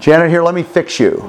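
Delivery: put-on condescending, know-it-all, patronizing voice. Imitating own past words to a spouse: imitating own condescending tone. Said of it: "So condescending and so patronizing".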